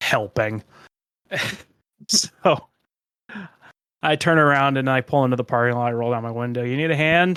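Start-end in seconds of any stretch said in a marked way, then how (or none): 0.0-0.6 acted-out, utterly defeated, most dejected voice possible. Retelling answering someone who asked what they were doing: mock-dejected voice. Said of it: "in the most dejected voice possible".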